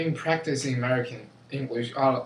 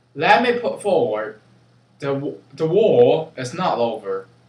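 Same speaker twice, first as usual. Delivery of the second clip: loud, put-on British accent on every word; 2 semitones higher, 7 dB louder than usual. Contrasting accents, saying the same sentence in a british accent. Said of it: "For a British is that".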